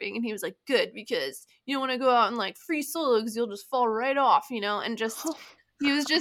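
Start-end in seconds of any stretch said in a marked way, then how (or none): 0.7-4.8 talking in a surfer-dude voice. Retelling what an old man said to them, making him sound like a surfer. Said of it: "I'm making him sound like a surfer or something".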